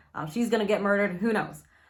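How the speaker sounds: plain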